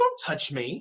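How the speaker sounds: high, offended, indignant tone. Grabbed and shoved by a stranger while another screams at them, a character responds, indignant. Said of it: "indignant because he dared put his hands".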